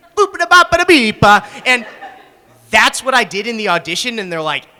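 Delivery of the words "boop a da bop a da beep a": bad, fake put-on Italian accent. Retelling a cartoon scene where Peter pretends to be Italian: Peter Griffin's bad Italian accent. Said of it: "He has this really bad accent where he's like".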